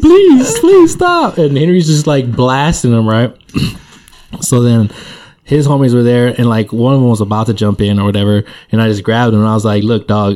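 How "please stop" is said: very high, weepy, acted-out crying voice. Retelling a fight, voicing the kid Henry was beating, imitating a crying kid. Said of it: "Crying, like, asking Henry to stop".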